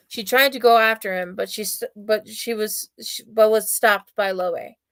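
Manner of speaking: ordinary delivery, nothing marked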